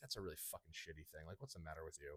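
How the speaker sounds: mock muttering. Retelling words said about a scam at a card event: imitating muttering under breath. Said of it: "under my breath I said".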